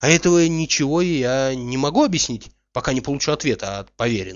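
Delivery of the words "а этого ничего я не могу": usual speaking voice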